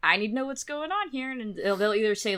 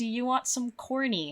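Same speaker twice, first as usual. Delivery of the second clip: cooing pet talk voice; 4 dB quieter than usual. Retelling how the ex-wife offered food to her bird: imitating the ex-wife talking to her bird. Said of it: "she'd be like".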